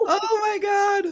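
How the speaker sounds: helpless laughter, high and slow laughing gasp.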